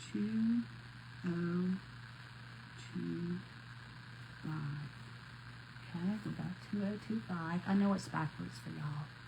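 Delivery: hushed whisper all the way through. Showing viewers how she writes the year on a project, whispering. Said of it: "I don't know why I'm whispering".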